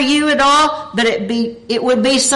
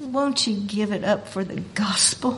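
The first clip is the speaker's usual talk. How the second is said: gentle, hushed, sweetly spoken; 3 semitones lower, 12 dB quieter than usual. Telling a personal story about being asked for something in life, recalling the request said sweetly. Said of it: "I'm going to try to imitate the voice of the Lord".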